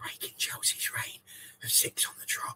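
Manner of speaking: whispered, very quiet, under the breath. Announcing a title win that ended Chelsea's run, said quietly. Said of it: "as I say it quietly".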